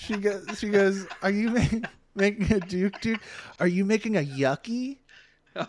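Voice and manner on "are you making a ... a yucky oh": mock baby-talk voice, higher pitch. Retelling what a woman said while laughing, imitating baby-talk voice. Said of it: "that stupid voice that you do with babies".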